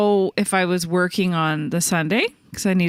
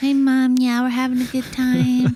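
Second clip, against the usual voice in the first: put-on sweet high child voice; 5 semitones higher than usual. Retelling a phone call with Mom as a teen: imitating own sweet child voice. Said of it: "all sweet, uh, child voice".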